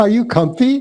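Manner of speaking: put-on Scottish accent. Retelling what a doctor asks when you sit down, Scottish accent imitating Doctor Wong. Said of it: "he's got the accent of a Scots person".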